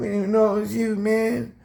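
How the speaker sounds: very high-pitched, tearful, crying, pleading voice. Retelling police begging him not to tell on them: imitating police crying. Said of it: "So they start crying".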